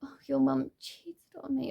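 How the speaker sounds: put-on mournful, sad, self-pitying tone. Retelling what dad said in the car: imitating dad saying it sadly. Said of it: "my dad just sort of said really sad".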